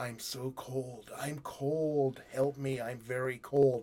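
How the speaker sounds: low, raspy voice kept soft and hushed. Retelling a movie scene where Tom phones Anne, in a low raspy voice. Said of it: "this low, raspy voice on the other end".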